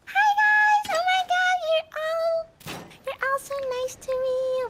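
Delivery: very high, squeaky put-on voice. Recalling how they used to talk back then, the speaker puts on a very high-pitched voice. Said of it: "speak in a very high pitch voice".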